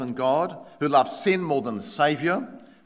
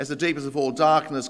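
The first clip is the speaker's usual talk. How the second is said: ordinary delivery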